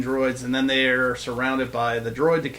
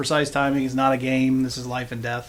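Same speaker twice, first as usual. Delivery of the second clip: plain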